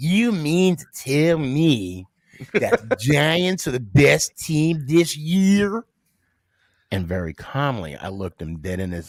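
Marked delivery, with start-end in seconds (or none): 0.0-5.8 play-acted condescending, slow and pitched up. Retelling a first sergeant's question about the Giants: imitating a condescending tone. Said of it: "the way he said it too is so condescending".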